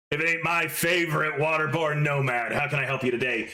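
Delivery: ground-out gravelly character voice. Answering a call as Wood Chipper, gravelly voice. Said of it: "voice kind of gravelly as always".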